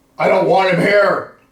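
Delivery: sudden booming, very loud, very high shout. Retelling a guy's voice heard in the house: imitating a loud shout. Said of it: "That loud".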